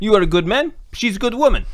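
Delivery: weak fake Italian accent. Talking about a couple, slipping into a kind-of Italian accent. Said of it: "Even in the Italian accent".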